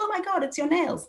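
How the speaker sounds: very high, exaggerated, put-on girly voice. Recounting how a woman described herself and her looks, mock girly voice. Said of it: "she puts on what I heard as a mock girly voice".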